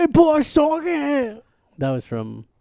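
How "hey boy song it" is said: fake Scottish accent, very high and very drawn out. Quoting a character line after another speaker recalls it: put-on scottish accent. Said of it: "but it was a Scottish accent".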